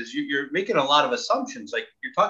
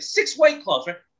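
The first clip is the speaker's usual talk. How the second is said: put-on excited man voice, much higher pitch; 11 semitones higher, 4 dB louder than usual. Retelling a guy walking up to the bar before a Yankee game, imitating an excited guy. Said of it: "he was so excited".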